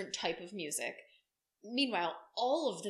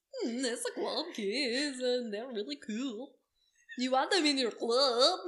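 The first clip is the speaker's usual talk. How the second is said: clumsy put-on German accent, loud and high; 5 semitones higher, 5 dB louder than usual. Imitating a man who called them club kids, in a German accent. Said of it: "I love German accents".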